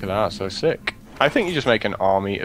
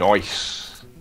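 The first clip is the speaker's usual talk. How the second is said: Australian accent, nice pronounced "noice". Explaining the australian way of saying nice: australian 'noice'. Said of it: "there's an O before the I. ... It's the Australian way of saying nice".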